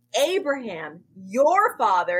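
mocking voice. Reading a scripture quote aloud, reading with a mocking tone. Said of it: "you can kind of hear the mocking tone in this".

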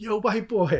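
put-on shrill scream, very high and loud. Recalling a man getting arrested on the corner yelling at him, retelling a scream. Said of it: "he's like screaming at me like".

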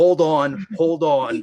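acted-out scream. Describing doing the ear thing, retelling a scream. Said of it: "I'm just screaming".

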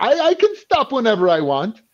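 put-on heavy Greek accent. Retelling what he used to say all the time, in a greek accent. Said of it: "he got a very Greek accent".

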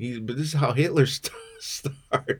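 high-pitched, laughing through the words.

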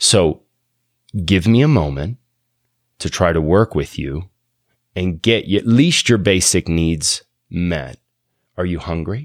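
speaking very low and calm. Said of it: "I try to talk real low and come real close".

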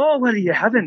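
put-on Scottish-accented dwarf voice. Acting out a tavern barkeep taking an order: stereotypical Scottish dwarf barkeep voice. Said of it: "kind of like that Scottish dwarf".

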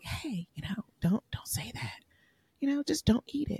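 very quiet, hushed whisper under the breath. Retelling a meal where he loudly complained about the food, the speaker recalls whispering to him. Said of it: "I was whispering".

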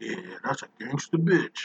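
mocking put-on character voice. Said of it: "or something he said about Amanda Waller".

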